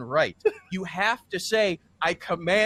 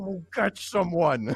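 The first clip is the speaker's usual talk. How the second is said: put-on whisper. Retelling a fight where a companion quietly gives an order: imitating someone whispering. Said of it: "Alkali whispers".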